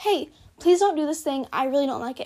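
resolute, firm, assertive, no-nonsense tone. Demonstrating the tone for asking someone to stop something: firm, assertive tone. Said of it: "This is the tone of voice that I use when I'm being firm and assertive".

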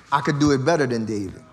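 put-on whisper. Acting out Absalom whispering in people's ears: imitating Absalom whispering.

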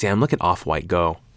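plain

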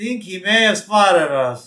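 muffled character voice. Retelling a scene where Bart hides behind a water cooler; muffled Bart voice. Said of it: "in a muffled voice".

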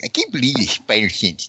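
put-on griping, complaining nerd voice. Chatting about a comic, showing the voice they should have used; gripey nerd voice. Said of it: "in my, like, gripey nerd voice".

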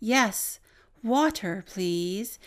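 very slow, clear, carefully enunciated words. Retelling a third female voice that answered the request: very slow and very clear. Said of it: "a third female voice come on very slow and very clear".

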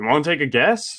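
put-on dry, sarcastic, teasing tone. Retelling what the announcer J R said: imitating J R sarcastically.

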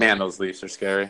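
ordinary delivery

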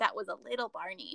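tiny, small, soft put-on little voice. Quoting a catchphrase the friends keep repeating: little voice. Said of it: "In that, like, little voice".

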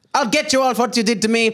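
put-on Spanish accent. Playing a character in a group scene, in a Spanish accent. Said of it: "he should have a Spanish twang".

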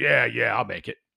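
rough gravelly tone. Retelling the new guy's answer about being there at eight, gravelly voice. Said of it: "In the gravelly voice".

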